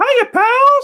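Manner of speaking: loud, cartoony voice pitched way up. Once the co-host says ready, doing the requested bit: Mickey Mouse voice. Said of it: "He loves doing Mickey".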